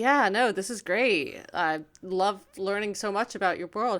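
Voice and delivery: plain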